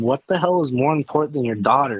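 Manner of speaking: plain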